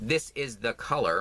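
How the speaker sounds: "this is the color" said slowly, carefully and clearly.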